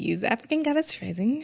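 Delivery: high, playful, joking put-on voice. Choosing a card deck, giving him a joking put-on voice. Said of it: "Let me not give him that voice".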